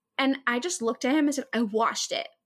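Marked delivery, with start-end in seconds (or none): 1.5-2.2 sassy, with way too much attitude. Retelling own reply to the boss about her hair: imitating way too much attitude. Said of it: "I said it with way too much attitude".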